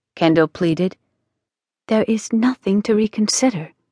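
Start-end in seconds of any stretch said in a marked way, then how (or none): 1.9-3.7 gentle, kindly voice. A woman answers the young legal student pleading with her, gently. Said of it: "she said gently".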